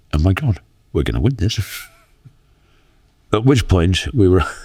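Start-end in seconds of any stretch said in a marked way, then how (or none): none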